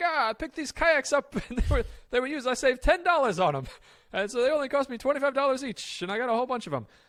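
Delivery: very high-pitched, loud New York dad voice. Imitate your dad talking about the kayaks he bought, as a dad impression, New York accent. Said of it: "my dad impression uh, of his New York accent".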